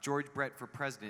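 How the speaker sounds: ordinary talk, nothing marked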